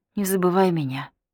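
ordinary delivery, nothing marked

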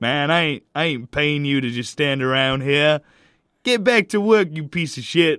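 loud, high, rural hillbilly voice. A boss talks to his worker, hillbilly gas-station owner voice. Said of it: "Sound like some hillbilly who owns a gas station".

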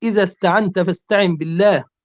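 normal talking voice

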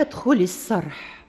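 ordinary delivery

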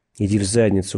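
ordinary delivery, nothing marked

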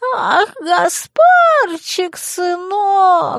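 piping, squeaky, very high falsetto voice. In a story, a killer quotes the woman he killed in a squeaky quoting voice. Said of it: "писклявым голосом процитировал он".

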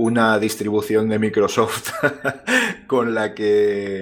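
laughing through the words slowly.

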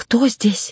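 shaky, quavering, high, trembling voice. Narrating a tense scene, reader voices Ravena asking in a trembling voice. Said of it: "Дрожащим голосом поинтересовалась Равена".

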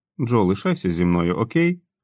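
ordinary delivery

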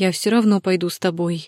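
ordinary delivery

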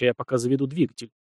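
plain

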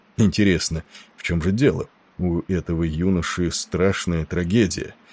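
plain

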